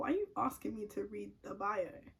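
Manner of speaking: ordinary talk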